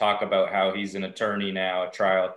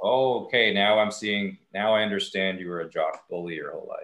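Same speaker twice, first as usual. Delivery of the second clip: ordinary talk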